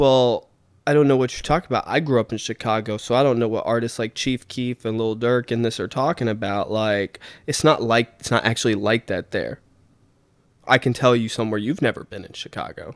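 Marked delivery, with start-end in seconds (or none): none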